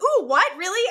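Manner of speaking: acted eager, thrilled surprise. Retelling a show character's reaction to scented paints: imitating an excited reaction.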